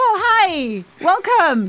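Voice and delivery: put-on Midwestern American accent. Retelling a man's greeting when they arrived: Ohio American accent. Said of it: "un accento americano dell'Ohio".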